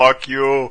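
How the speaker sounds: mock completely deadpan, bone-dry, expressionless delivery. Recalling a Total Recall scene, the speaker acts out the line: acting out Arnold's deadpan line. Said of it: "just completely deadpan".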